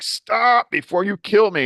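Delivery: shrill, very high, loud screaming voice. Retelling being thrown around by a spinning drive shaft: imitating own past scream.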